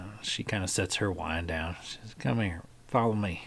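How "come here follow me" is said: usual speaking voice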